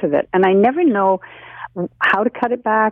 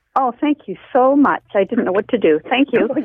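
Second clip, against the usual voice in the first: grateful tone with an audible smile; 3 semitones higher than usual. A caller thanks the host for gardening advice, with a smiling voice. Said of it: "you can hear a smile in that voice".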